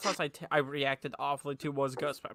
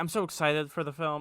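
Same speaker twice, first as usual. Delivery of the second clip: usual speaking voice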